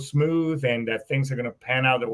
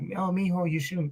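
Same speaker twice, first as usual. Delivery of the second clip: soft, caring motherly voice; 4 semitones higher, 7 dB quieter than usual.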